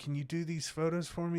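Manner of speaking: play-acted hard begging, pitched high. Retelling how an old man asked for restored photos: imitating someone begging. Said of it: "he was just begging me".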